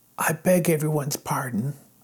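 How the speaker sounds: whispering. Apologizing to the others for waking them too early, whispered. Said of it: "whispered Wilbur".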